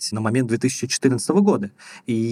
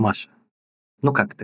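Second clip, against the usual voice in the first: ingratiating, gently creeping, insinuating tone; 3 semitones lower than usual. Speaker mimics how therapists usually greet a client; imitating a therapist's ingratiating voice. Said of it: "таким вкрадчивым голосом говорят".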